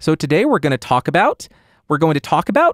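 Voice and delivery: question-like pitch rise on each about. Explaining how people end sentences, demonstrating upspeak with rising sentence endings. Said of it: "It's called upspeak".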